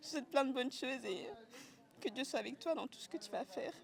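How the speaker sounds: high, choked-up voice, crying through words. The speaker wishes someone well, choking up with tears. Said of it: "j'arrive plus à parler".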